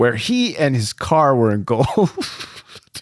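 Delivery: reading through laughter, cracking up. Reading a line aloud to another speaker, cracking up while reading. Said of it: "you're cracking up at the word engulfed".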